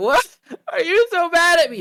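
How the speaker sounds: put-on tearful drunken wail, very high and loud. Retelling what a drunk friend said while crying: imitating Sarah drunk crying. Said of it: "And tears are pouring".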